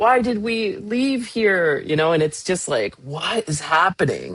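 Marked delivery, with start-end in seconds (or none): 0.0-1.8 high, drawn-out, weepy, tearful crying. Retelling what one of the girls said while crying: imitating a crying daughter.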